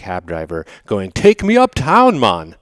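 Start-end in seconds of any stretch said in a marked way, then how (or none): 1.1-2.4 put-on Jamaican accent, much higher and louder. Retelling talking to a jamaican cab driver in front of your kids, jamaican accent. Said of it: "why are you speaking with a Jamaican accent".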